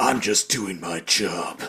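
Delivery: slow, gruff action hero voice. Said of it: "he talks like a gruff action hero".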